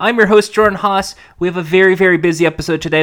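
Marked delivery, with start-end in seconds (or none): 2.0-3.0 rattled off very fast. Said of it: "That's why I'm speaking very fast".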